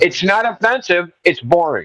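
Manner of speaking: insistent, forceful, emphatic delivery. Arguing with another speaker who posted a meme: shouting. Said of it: "why are you screaming then".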